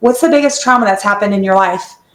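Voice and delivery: ordinary delivery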